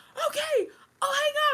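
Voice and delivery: very high, loud, thrilled, excited shriek. Retelling how Mom screamed when a game show called: imitating mom screaming. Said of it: "she starts screaming and she's like".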